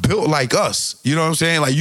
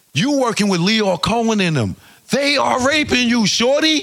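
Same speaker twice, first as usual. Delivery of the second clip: heated, high-pitched, passionate yelling; 7 semitones higher than usual. Recounting an interview where one man yells at another, retelling a yell. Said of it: "he's yelling at him".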